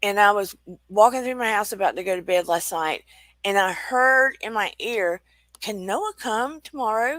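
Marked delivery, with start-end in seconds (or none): 5.6-7.2 put-on light, little Aussie accent, pitched high. Speaker retelling a voice heard in the ear at night, in a little Aussie accent. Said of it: "In a little Aussie accent".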